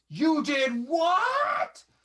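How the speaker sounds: very high, shrill, swooping, stretched-out banshee shriek. Voicing a furious mother in a game scene: wailing banshee shriek. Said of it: "it's like a wailing banshee just hits your eardrums".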